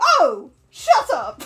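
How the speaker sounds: mock, sharp exclamation. Repeating how the other player just said it: imitating a sharp exclamation. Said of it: "It's just the way you said it".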